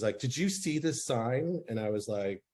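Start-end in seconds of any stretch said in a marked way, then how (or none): 0.2-1.6 play-acted angry, irate, accusing, pitched up, slow. Retelling a woman at her door confronting the speaker, imitating an angry woman. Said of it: "she was so pissed".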